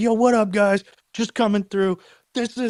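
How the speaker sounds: amped-up, pumped, high, blasted-out delivery. Speaker retells finally getting called on, all amped up, retelling an amped-up greeting. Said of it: "and I'm all lit, dude".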